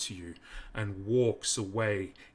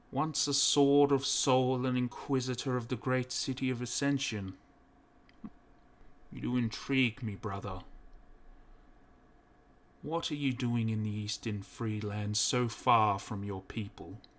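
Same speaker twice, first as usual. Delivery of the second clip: echoing, inward-sounding inner voice; 3 semitones higher than usual. The hooded priest addresses Tyrius in his cell: echoing voice in the mind.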